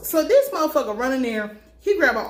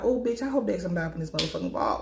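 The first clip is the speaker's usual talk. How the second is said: panicky, fretting, fast and rattled-off; 4 semitones lower, 6 dB quieter than usual. Retelling own reaction as a vault opens: imitating own panic. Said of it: "I was panicking".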